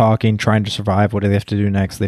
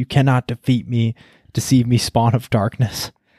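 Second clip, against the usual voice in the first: put-on intense, defiant, mild dramatic yell; 2 semitones higher than usual. Retelling what a character screamed at Carrie: imitating someone screaming. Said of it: "she was screaming at Carrie".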